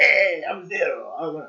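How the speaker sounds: awful put-on Spanish accent. Speaker invents a cop-show character called Zero, in an awful Spanish-like accent. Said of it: "awful, like Spanish accent".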